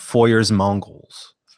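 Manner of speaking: American-accented pronunciation. Reading out a photo series title, in an american accent. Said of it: "I'll use my American accent".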